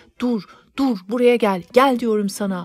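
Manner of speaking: loud, furious, enraged shout. Reading a story aloud, the narrator yelling at the servant: furious shout. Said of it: "diye haykırdım".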